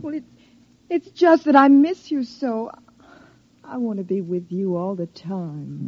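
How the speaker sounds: tearful voice, close to crying. Speaking to someone about to leave for the day: tearful. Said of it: "there's no need to cry now".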